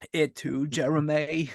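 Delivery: strained voice, as if in sudden sharp pain. Playing Jeremy's victim as he's getting stabbed, answer him in a Forrest Gump voice. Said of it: "Why did you sound like Forrest Gump as he's getting stabbed?".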